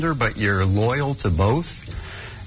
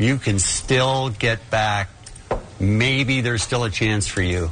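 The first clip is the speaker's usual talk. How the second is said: very slow, drawn-out speech. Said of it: "you're talking really slow".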